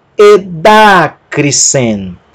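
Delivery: Edacrisen said with stress on syllable da. Spelling out a word, then saying it with stress on the syllable da. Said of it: "eu pronunciei a sílaba tônica como se fosse da".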